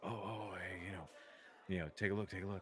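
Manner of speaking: low, hushed murmuring of many voices. Voicing onlookers who watched her beat a dwarf: murmuring onlookers. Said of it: "you hear the murmuring".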